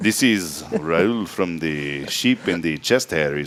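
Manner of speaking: low-pitched, clumsy, bad put-on Italian accent. On the show, a co-host urges him to try his italian voice: bad put-on italian accent. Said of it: "Maybe you should try your Italian voice".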